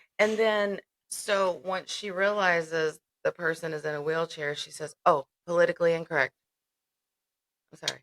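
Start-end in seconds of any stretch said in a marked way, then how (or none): 5.1-6.4 mock snarky delivery. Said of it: "she said it in a really snarky way".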